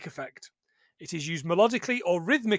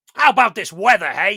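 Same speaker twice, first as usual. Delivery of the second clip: put-on loud, booming, belted Brooklyn accent; 9 dB louder than usual. Speaker retells meeting a toon cab called Benny, Benny the Cab Brooklyn accent. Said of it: "with his Brooklyn accent".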